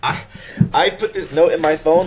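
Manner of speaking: getting excited, high, loud, rushed.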